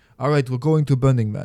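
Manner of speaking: put-on Israeli accent, given a best try. Speaker quotes a friend from a phone call, in an Israeli accent impression. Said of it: "I'm going to do my best uh, Israeli accent impression".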